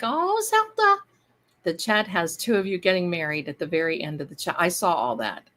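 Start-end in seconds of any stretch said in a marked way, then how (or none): 0.0-1.0 put-on high, slow girl's voice. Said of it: "She was like".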